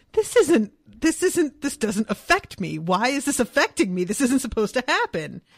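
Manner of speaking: acted, agitated, bewildered, loud and swooping. Retelling own reaction while reading a sad scene aloud: retelling agitated reaction. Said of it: "I got very agitated".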